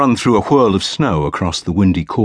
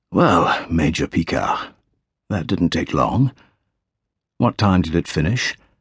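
quiet, hushed, soft-spoken, low-key voice; 4 dB quieter than usual. Narrator reading the General greeting Major Picard, in a quiet voice. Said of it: "He says in his quiet voice".

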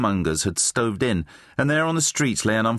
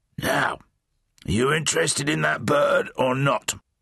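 wheezy, much higher; 4 semitones higher than usual. A character presses a speechless boy about a bedraggled bird, wheezy. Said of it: "Flabsweat asked wheezily".

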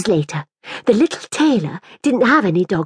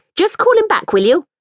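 impatient delivery with raised pitch; 8 semitones higher, 3 dB louder than usual. Reading a woman telling another to call her dog back, impatiently. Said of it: "said the woman impatiently".

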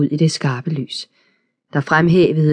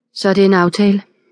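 flat, toneless voice, higher pitch; 4 semitones higher than usual. A woman settles an agreement with the others, speaking tonelessly. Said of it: "sagde hun tonløst".

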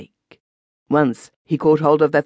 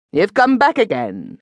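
sharp, curt, cutting delivery; 4 semitones higher than usual. A woman drawing the bolts for a man who has come back, sharply. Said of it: "she said sharply".

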